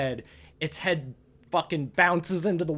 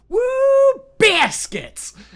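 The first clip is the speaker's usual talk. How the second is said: very loud, very high booming whoop, biscuits hit hard; 9 dB louder than usual. Retelling a man in the building yelling out of nowhere, retelling a shout stressing biscuits. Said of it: "some dude at the top of his lungs was just like".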